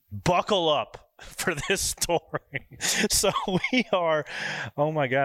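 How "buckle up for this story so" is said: laughing through the words. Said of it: "I can't even say it without laughing".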